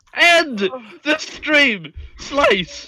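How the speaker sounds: shouting. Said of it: "if you want [name] to stop yelling".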